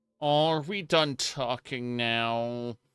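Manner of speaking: put-on whining tone. Mocking a needy game companion's line: imitating a whiny voice. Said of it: "a little whiny voice".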